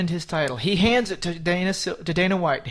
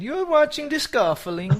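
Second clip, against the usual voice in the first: put-on Italian accent, pitched up; 8 semitones higher than usual. Redoing the line as the co-host suggested, in an italian accent. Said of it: "say it with an Italian accent".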